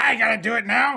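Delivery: quarrelsome goblin voice. Voicing a goblin told to chop up a dead hobgoblin: arguing goblin voice. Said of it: "and it's like".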